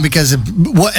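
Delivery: plain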